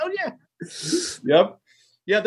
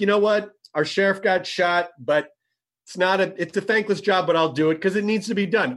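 ordinary talk

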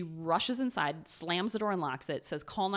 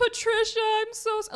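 put-on very high, loud, weepy, tearful sobbing; 8 dB louder than usual. Retelling a phone message a man left for a woman, imitating a man crying. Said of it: "He's crying or pretending to cry".

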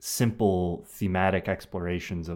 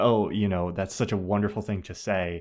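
plain

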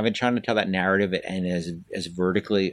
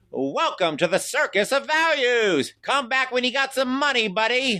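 stretched out, drawn way up high in pitch. Performing two clown lines on request: Circus of Values clown voice. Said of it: "could you do it one more time".

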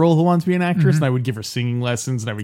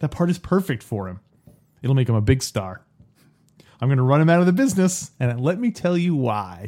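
calm, composed, reasonable, even voice. Reading a movie scene's lines aloud, in a calm, rational voice. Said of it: "calm, rational voice".

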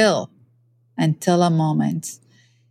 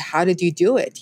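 normal talking voice

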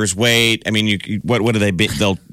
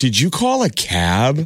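scornful, very slow, swooping, with "cab" stretched out; 3 semitones higher than usual. Recalling how people used to ask about calling a cab: mock-disdainful. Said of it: "people would say it like this. ... people used to say that with disdain".

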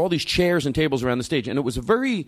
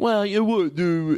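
put-on dopey, dim-witted voice, pitched high; 5 semitones higher than usual. Retelling what someone said in earnest, in a put-on dumb voice. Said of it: "I do the dumb voice".

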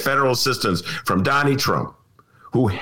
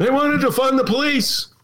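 bad put-on voice pushed way up high; 11 semitones higher than usual. Imagining a future speech near Chicago: terrible Donald Trump imitation. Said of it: "That's a terrible Donald Trump imitation".

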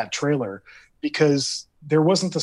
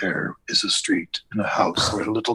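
low, scary, ominous horror-trailer narrator voice; 4 semitones lower than usual. Retelling a movie's prologue narration over still images, scary trailer narrator voice. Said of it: "it was just a scary voice going".

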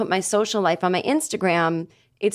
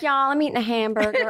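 put-on Southern American accent; 4 semitones higher than usual. Imitating a woman who now has a new Southern accent: Southern American accent. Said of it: "She has a Southern accent now".

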